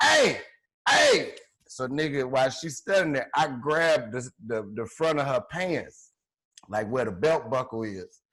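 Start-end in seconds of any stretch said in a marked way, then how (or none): 0.0-1.3 mock very high-pitched, shrill yell. Retelling a confrontation where she reaches over to yell, retelling her yell. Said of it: "reaches over me to yell and starts yelling like".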